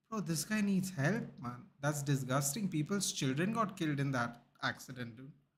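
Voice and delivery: ordinary talk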